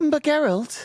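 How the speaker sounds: very high put-on female voice. Speaker imitating how an audiobook narrator voices women, narrator's put-on woman voice. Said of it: "Whenever he voices a woman, he always goes".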